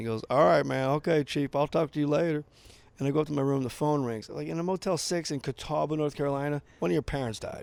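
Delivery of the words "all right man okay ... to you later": put-on southern US accent. Retelling what the man cleaning the pool said on parting, in a southern accent. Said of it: "with like a southern accent".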